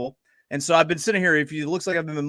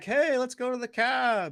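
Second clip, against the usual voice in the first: put-on Kiwi accent, high-pitched, slow and drawn out; 9 semitones higher, 4 dB quieter than usual. Imitating how people from new zealand say a line: imitating a new zealand accent. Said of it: "The people from New Zealand are like".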